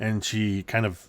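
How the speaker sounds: normal talking voice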